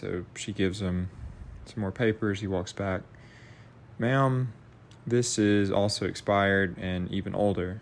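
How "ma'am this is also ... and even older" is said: ordinary delivery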